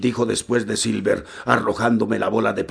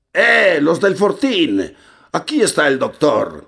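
ringing, clear, high, bellowed roar; 6 semitones higher than usual. A voice from the edge of the woods wakes the sleeping fort, a clear roaring voice. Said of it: "Una voz clara que nos rugía".

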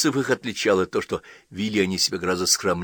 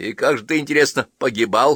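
grumbling, higher pitch; 4 semitones higher, 4 dB louder than usual. The priest's wife questions her husband back from the capital, grumbling. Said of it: "Продолжала ворчать попадья".

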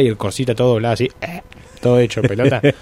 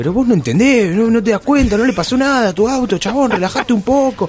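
play-acted shouted scolding, very high-pitched; 10 semitones higher than usual. Retelling how a cyclist yelled at an old man over his car: imitating someone shouting. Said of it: "empieza a gritar al viejo y le dice".

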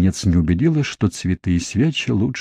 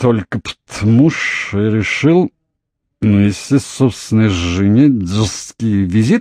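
slurred, tongue-tied mumbling; 3 dB louder than usual. Narrator voices Jamie answering his wife Margaret, who is reading in bed; slurred mumble. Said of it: "промямлил муж непослушным языком".

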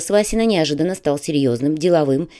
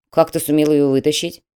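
plain

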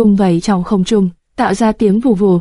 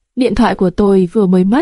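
plain

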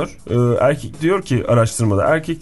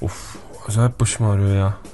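low male voice, grumbling complaint. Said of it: "Sen erkek yapıyor".

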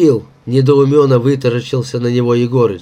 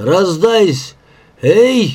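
calling out loudly, yelling; 5 semitones higher than usual. Yegorych shouts to Uraza at the construction pit; shouted. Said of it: "крикнул он Уразе".

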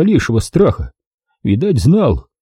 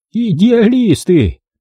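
cried out, pitched very high; 10 semitones higher than usual. A woman answers the narrator's admission, exclaiming. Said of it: "воскликнула она и поджала губы".

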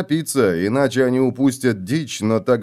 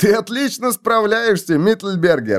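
teasing, giggling, higher pitch; 9 semitones higher than usual. A guard teases a young fellow guard struggling with a heavy axe, giggling. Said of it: "хихикнул его сослуживец".

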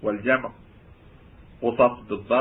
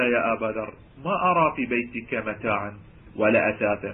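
normal talking voice

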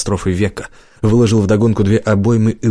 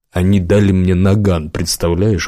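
usual speaking voice

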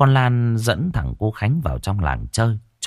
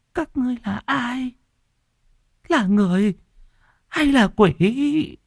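very high, quavering, trembling, frightened voice. An old woman, frightened at the sight of two children, speaks in a trembling voice. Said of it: "giọng run rẩy".

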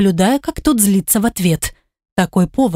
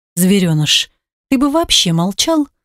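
ordinary delivery

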